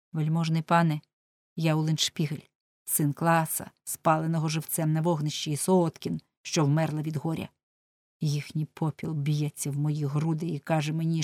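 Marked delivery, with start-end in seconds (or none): none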